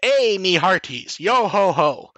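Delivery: very slow pirate voice, every word dragged out. Retelling a cheesy English dub of Captain Harlock: pirate voice. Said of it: "his Captain Harlock, which was William Winkler, was".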